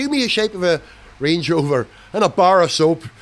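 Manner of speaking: loud, sudden put-on Northern Irish accent. Talking about a car's design, the speaker slips into a Northern Irish accent. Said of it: "I'm doing a Northern Irish accent".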